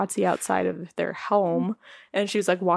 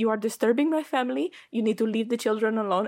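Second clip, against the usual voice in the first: imitated Spanish accent; 3 semitones higher than usual. Retelling what a woman said to people walking over, in a Spanish accent. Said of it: "doing the whole accent the whole time".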